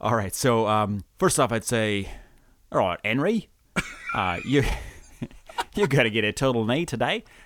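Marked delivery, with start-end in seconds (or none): 2.7-7.2 put-on Yorkshire accent drifting Australian, faster. Role-playing an anesthetist explaining a knee replacement to the patient, yorkshire accent drifting australian. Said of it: "drifted from I don't know, Yorkshire accent over to Australian".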